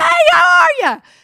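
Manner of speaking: very high, very loud, friendly hollering. Retelling turning around to greet a ticket agent: imitating a Mississippi-style greeting. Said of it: "in good Mississippi fashion go".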